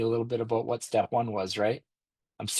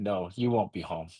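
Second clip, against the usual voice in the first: put-on mock-disgusted tone; 3 semitones lower than usual. Retelling his wife's reply on the phone, imitating her disgusted tone. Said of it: "you could just hear the disgust in her voice".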